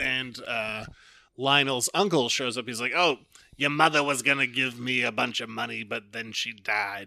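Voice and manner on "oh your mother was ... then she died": motherly voice.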